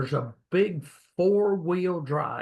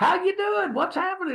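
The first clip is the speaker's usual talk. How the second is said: mock all-happy cheerful voice, pitched very high. Retelling how a homeowner answered the door: imitating a happy homeowner. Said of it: "he was all happy and just".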